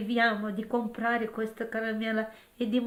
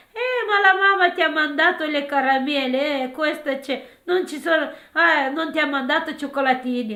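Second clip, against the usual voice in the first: loud, high-pitched, playful jokey teasing, acted out; 5 semitones higher, 8 dB louder than usual. Retelling how a grandfather joked with a granddaughter: imitating someone teasing a child. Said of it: "scherzava con la mia figlia".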